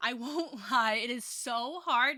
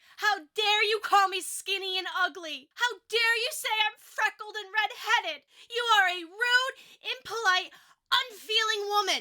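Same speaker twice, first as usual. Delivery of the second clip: loud, very high-pitched, furious, outraged shouting; 10 semitones higher, 5 dB louder than usual. Reading a girl's outburst at a woman who insulted her: loud angry shouting. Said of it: "I am trying to do this far from the mic".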